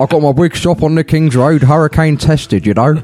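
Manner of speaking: put-on New Zealand accent. A podcast co-host performs as Ron Harris for the others: Ron Harris impression, Kiwi twang. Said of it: "With a Kiwi twang".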